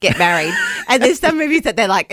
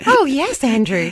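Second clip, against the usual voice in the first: cute assistant voice, higher pitch; 6 semitones higher than usual. Teasing another speaker about the AI assistant he uses, doing a cute Grok voice. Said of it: "because she has a cute voice".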